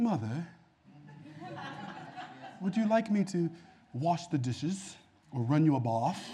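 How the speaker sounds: put-on British accent, pleading, best-behaved, soft, swooping. Speaker acting out a kid promising to be good, talking like they're British. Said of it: "you start talking like you British".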